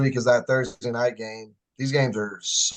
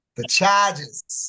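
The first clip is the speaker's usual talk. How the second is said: higher-pitched fake Boston accent attempt; 7 semitones higher than usual. Giving a football pick, trying a Boston accent. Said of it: "I'm gonna try my Boston accent here".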